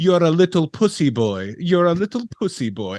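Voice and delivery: put-on French Canadian accent, called out. Retelling what a sister said from the bathroom window, in a French Canadian accent. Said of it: "in a French Canadian accent".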